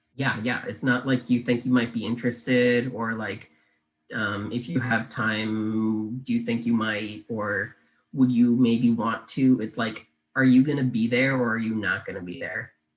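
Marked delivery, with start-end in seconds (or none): 10.4-12.7 firm, direct, assertive tone, much faster. Demonstrating a direct way to ask whether someone will be there, assertive. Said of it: "It was very assertive".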